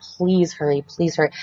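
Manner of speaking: play-acted desperate, scared, pleading voice. Hiding in the bathroom on the phone, retelling pleading and begging. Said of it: "I'm just like pleading and begging".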